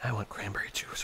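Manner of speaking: soft, unvoiced whisper.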